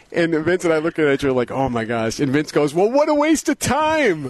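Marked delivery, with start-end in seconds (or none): 2.7-4.3 put-on very high shout, "time" drawn out long. Retelling what another attendee yelled at an off-the-record media session; retelling a yell. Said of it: "He yells that out".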